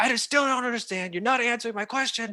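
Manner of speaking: shrill, very high, loud screaming outburst. Recounting screaming at a young Baba, retelling a scream. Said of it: "I was screaming at him".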